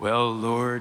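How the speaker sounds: deep baritone register on Lord. Describing a habit that creeps in when saying Lord: baritone voice on 'Lord'. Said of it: "you get that baritone kind of voice going".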